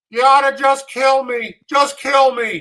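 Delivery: play-acted very loud, high, tearful crying. Retelling what a man said while crying on the board: imitating someone crying. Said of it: "he was crying".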